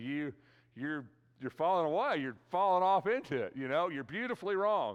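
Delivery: sarcastic voice throughout. Paraphrasing Paul's remark to those falling away: sarcastic Paul voice.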